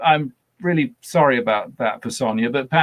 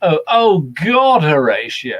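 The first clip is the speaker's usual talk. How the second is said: loud, very slow, drawn-out, mock weary exasperation; 2 semitones higher, 5 dB louder than usual. Recalling how an actor plays Hamlet's death: Sam West's dying Hamlet, weary exasperation. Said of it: "kind of tone of voice".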